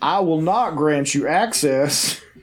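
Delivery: creepy put-on hipster uncle character voice. Inventing lines for a man in a photo: put-on Williamsburg serial killer voice. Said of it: "I'm giving this character this voice".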